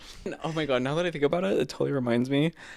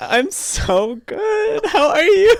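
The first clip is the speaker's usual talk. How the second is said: put-on, very high, very loud, drawn-out, near tears; 8 dB louder than usual. Retelling a reply to an acquaintance in Target: imitating holding back tears. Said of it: "I had tears in my eyes".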